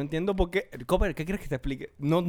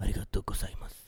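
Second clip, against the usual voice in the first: whispered, breathy put-on voice-over narrator voice; 10 semitones lower, 6 dB quieter than usual. Joking about a hypothetical scene, someone speaking from behind: put-on voice-over voice. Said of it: "saldría uno por allá atrás con voz en off".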